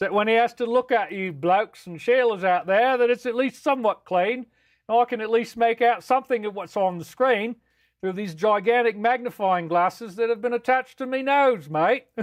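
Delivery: put-on Australian accent character voice. Building a comic character for viewers, speaking in a put-on australian accent. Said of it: "It actually is an Australian accent".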